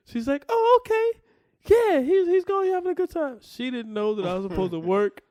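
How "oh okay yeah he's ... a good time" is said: very high, raised voice. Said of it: "your sister's voice".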